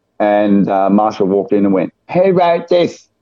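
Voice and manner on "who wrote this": very high, very camp effeminate voice.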